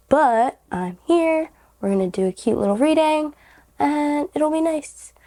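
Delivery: hoarse raspy voice. Speaker still on the mend from a week-long cold starts a reading, raspy voice from a cold. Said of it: "my voice is a little raspy".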